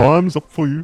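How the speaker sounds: put-on British boxer accent. Imitating a boxer talking to a YouTuber: Tommy Fury impression. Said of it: "He's very he's very much like".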